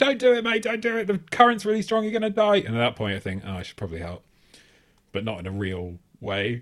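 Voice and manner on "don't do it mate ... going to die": very high, shrill screaming. Retelling how two girls crossed the street and screamed at a guy, retelling their screaming. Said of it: "And start screaming like".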